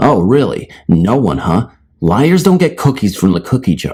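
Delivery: acted-out mocking sarcasm. Speaker retelling their reply to someone caught sneaking the cat inside, retelling a sarcastic reply. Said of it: "as sarcastically as I could".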